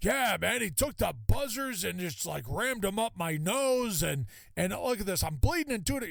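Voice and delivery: put-on yelling voice. Retelling how an angry colleague came out: imitating someone yelling. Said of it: "why are you yelling at me".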